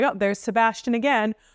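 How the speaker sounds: normal talking voice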